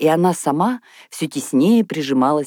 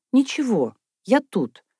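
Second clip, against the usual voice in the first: shy, halting, timid high babbled words; 8 semitones higher than usual. Asked to give up her seat, she answers from her chair, babbling timidly. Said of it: "пролепетала она".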